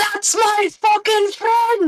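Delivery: high, slow, drawn-out scream. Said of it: "and he screams".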